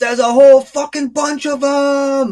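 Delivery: very high, shrill, loud, frantic goblin shriek. Voicing a fleeing goblin running back to the castle: goblin screaming in panic. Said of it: "screaming in Goblin".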